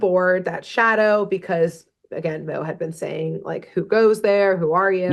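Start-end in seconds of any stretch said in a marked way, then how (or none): none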